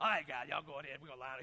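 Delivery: thick, hard-to-make-out, mumbled Southern voice. Recalling football practice, the speaker imitates his coach's funny voice. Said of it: "he had a funny voice".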